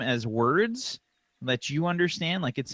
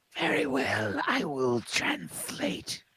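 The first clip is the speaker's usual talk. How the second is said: rustling, scratching papery creature voice, lower; 4 semitones lower, 4 dB quieter than usual. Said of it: "paper scratching against itself".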